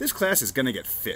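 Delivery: ordinary delivery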